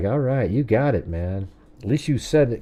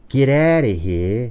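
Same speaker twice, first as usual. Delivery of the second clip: hard, street-tough gangster guy voice. Quoting a man who kicked students out of class, in a gangster-guy voice. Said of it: "He'd talk like this gangster guy".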